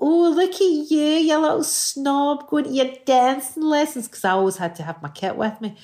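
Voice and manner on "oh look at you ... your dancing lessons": taunting schoolkid voice. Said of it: "And people go".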